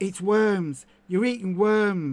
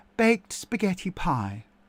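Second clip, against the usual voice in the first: put-on announcer voice, broadcaster style. After offering to do the BBC voice, reading aloud in a BBC voice. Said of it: "shall I do the B B C voice?".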